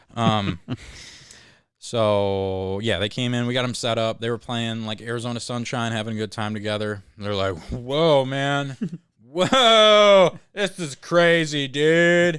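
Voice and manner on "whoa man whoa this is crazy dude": very slow, loud stoner drawl with stretched whoa. Describing two guests playing Arizona Sunshine, the speaker quotes them: stoner voice. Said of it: "the most your stoner voice that you do".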